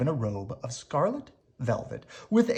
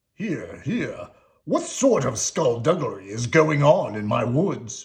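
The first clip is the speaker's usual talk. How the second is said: booming, bellowing, roaring king voice; 2 semitones lower, 4 dB louder than usual. Narrating a story and voicing the king as he confronts Sebastian, roaring. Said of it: "roared the king".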